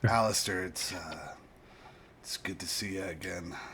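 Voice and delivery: slow, middle-aged man's sheriff voice. In the game, playing the town sheriff, greeting alistair again: middle-aged sheriff character voice. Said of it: "And I am playing [name], a middle aged man uh, who's the sheriff of the, the town of Almengoro. / a middle aged man uh, who's the sheriff of the, / a middle aged man uh, / a middle aged man uh, / who'".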